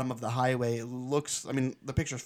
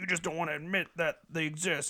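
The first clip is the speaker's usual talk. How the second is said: plain, normal talking voice; 4 semitones higher than usual. Retelling a friend's argument about aliens: imitating Joe. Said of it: "He's like".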